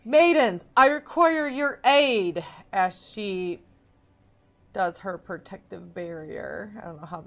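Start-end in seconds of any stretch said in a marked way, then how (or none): 0.1-2.4 high, very loud battle scream. Voicing a paladin calling spectral maidens to aid: screaming in character. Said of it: "She is going to scream, scream out".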